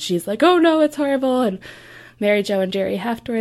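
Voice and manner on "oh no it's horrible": mock weepy, high, tearful, sobbing voice. Retelling how a grandmother reacted to sad news: imitating someone crying. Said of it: "She starts crying".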